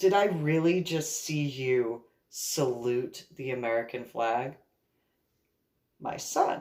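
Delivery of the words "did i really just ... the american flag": voice full of disgust. Retelling what an ex-boyfriend said in the car: imitating disgusted tone. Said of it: "with disgust".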